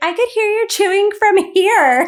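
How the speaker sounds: very high, very loud, shrill yell. Retelling how the husband complained about Kevin's chewing: imitating someone yelling. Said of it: "he was, like, yelling at Kevin".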